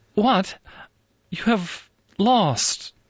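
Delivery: very high, slow, drawn-out sympathetic tone. A woman speaks to an old acquaintance after noticing her garb, sympathetic. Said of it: "her voice grew sympathetic in spite of herself".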